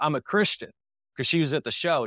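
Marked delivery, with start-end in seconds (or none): 0.0-0.7 put-on woman's voice, shouting, mildly mad. Retelling how an upset woman from the show shouted at the speaker: imitating a woman shouting. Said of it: "And she shouted".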